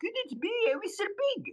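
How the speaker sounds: put-on very high-pitched, fast French accent. Retelling a man who stops inches from his face to introduce himself, very high-pitched French accent. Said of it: "he has this very high pitched French accent".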